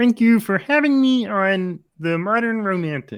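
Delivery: very high-pitched, loudly belted voice. Thanking the show for having them on: Kermit the Frog voice. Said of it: "better Kermit than I do Gonzo".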